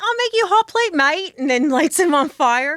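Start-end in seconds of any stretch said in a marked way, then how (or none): 0.0-1.3 very high, bad, fake Australian accent. Imagining an exchange, the speaker voices the woman's retort in a bad australian accent. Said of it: "it's the best I can do for now".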